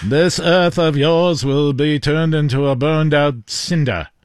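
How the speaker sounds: put-on old-time film voice, transatlantic accent. A host repeats a threat from an old film: old-timey movie voice. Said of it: "This is my old-timey movie voice".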